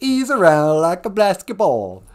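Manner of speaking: put-on loud, swooping, sing-song, laid-on Italian accent. Retelling a cartoon, quoting Columbus in a stereotypical Italian accent. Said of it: "stereotypical Italian accent".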